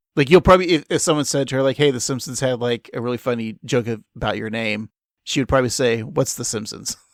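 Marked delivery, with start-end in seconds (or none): 6.0-7.0 put-on flat, blank, affectless deadpan voice. Imagining a comedian's reply when told of a joke about her name, deadpan Tig Notaro impression. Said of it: "just in a deadpan voice".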